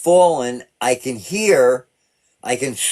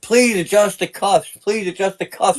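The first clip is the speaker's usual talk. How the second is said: mock scream, higher pitch; 7 semitones higher than usual. Retelling a plea from the back of a patrol car: imitating own past screaming. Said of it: "And I start screaming".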